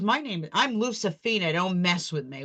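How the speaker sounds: put-on New York accent. Retelling a meeting where a woman introduces herself: Lucifina's New York accent. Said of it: "with her New York accent".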